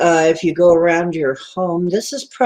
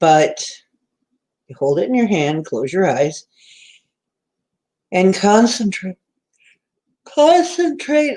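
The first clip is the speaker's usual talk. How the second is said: speaking through yawns. Giving instructions to listeners, yawning while talking. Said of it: "I don't know why I'm yawning so much".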